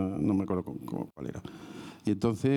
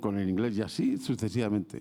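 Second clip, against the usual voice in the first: ordinary talk, nothing marked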